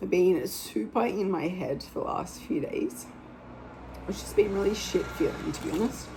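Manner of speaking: choked-up voice right on the edge of crying. Speaker who cried this morning opening up, near tears. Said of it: "I'm gonna cry again".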